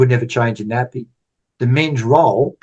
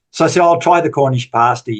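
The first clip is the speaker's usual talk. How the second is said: usual speaking voice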